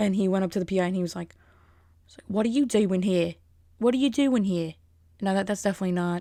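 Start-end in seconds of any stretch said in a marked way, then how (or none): 2.3-4.7 put-on unsure, hesitant British accent. Retelling a story, the speaker quotes a man confronting a PI in a vaguely British-sounding voice. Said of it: "Is that British?".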